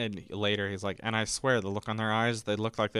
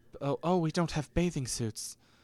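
fake British accent, pitched up; 7 semitones higher than usual. Retelling a story, the speaker voices kids wanting to swim, put-on british accent. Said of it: "I gave them British accents".

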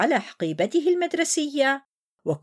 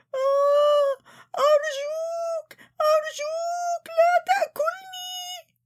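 very high-pitched, terrified shriek; 14 semitones higher than usual. Narrating a child begging a monster from a picture, screaming in fright. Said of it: "صرخ ليث بفزع".

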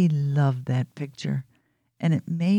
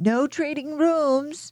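shrill, very high yelling shout; 12 semitones higher than usual. Narrating, a girl stomps down the stairs after running off: yelled. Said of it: "she yelled as she stomped down the steps".

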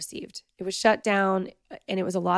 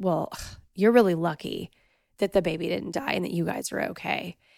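mock snarky, condescending tone. Retelling what a visiting friend said from her couch, imitating a snarky tone. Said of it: "she said it with such like snarky, like condescending tone".

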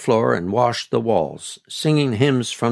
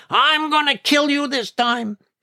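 shrill, very high scream. Grandmother rushes out to find her books scattered over the grass, screaming.

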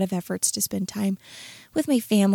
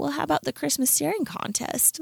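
put-on high-pitched small boy's voice; 7 semitones higher, 4 dB quieter than usual. A parent retells his son's suggestion for the Christmas calendar, little kid voice. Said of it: "in his little guy voice".

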